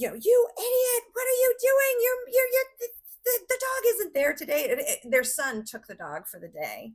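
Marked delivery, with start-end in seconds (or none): 0.1-4.7 mock shrill, furious, very high, loud screaming scold. Retelling how the wife screamed at him over the phone: imitating someone screaming. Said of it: "And she's screaming at him".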